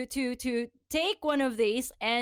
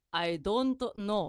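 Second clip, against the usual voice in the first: brief words in a put-on Japanese accent; 3 semitones lower than usual. Retelling a man's reply about the porn cover on the manga, in a Japanese accent. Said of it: "and he's like in a Japanese accent".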